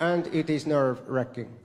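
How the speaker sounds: flat, emotionless voice. Retelling a Finnish comedian friend's reply from a speeding taxi: imitating an emotionless Finnish friend. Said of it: "he was like".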